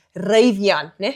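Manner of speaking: South African Afrikaans accent. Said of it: "say it in a very Afrikaans way".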